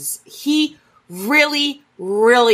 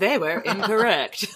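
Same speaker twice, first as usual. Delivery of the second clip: all-knowing storyteller narrator delivery; 3 semitones higher, 4 dB quieter than usual. While another speaker tells a history story, one chimes in: narrator voice. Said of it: "narrator voice".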